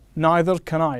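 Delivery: normal talking voice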